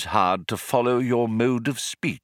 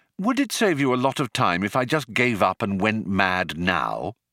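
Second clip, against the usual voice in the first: ordinary delivery, nothing marked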